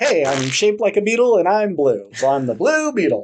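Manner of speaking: high, loud, goofy voice, sounding dumb and obvious.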